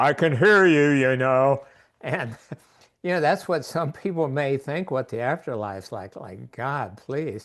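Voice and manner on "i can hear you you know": big, loud, booming voice thundering from the heavens. Telling a joke about souls in the afterlife, a big voice booms out of the sky. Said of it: "a big voice booms out of the sky".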